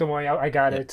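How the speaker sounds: put-on smug, self-satisfied voice. Retelling how a comic character answers: imitating a smug character. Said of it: "Acts like a smug a-, a smug asshole".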